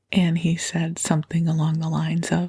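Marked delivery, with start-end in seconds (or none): none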